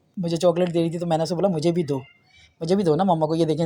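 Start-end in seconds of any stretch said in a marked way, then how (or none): none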